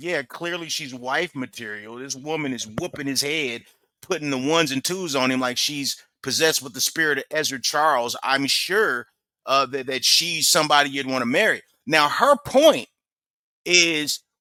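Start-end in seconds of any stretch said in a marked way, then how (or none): none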